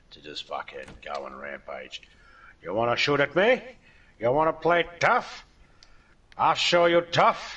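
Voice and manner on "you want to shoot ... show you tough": very loud, shrill tough-gangster shouting. While giving advice on gearing up again after getting killed, break into your best Scarface impression. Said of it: "That's my best Scarface".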